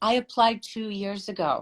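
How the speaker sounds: normal talking voice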